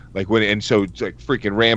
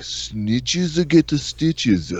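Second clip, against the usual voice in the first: heavy put-on Japanese accent, pitched up; 6 semitones higher than usual. Retelling answering his girlfriend's question for the cat Chibi: thick Japanese accent. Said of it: "in a fucking thick Japanese accent".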